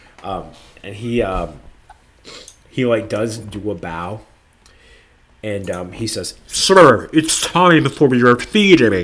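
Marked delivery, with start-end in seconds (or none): 6.5-9.1 loud, booming cartoon voice with big pitch swoops. Voicing a bowing character speaking to a sir: Zoidberg voice. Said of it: "that's what I'm going for".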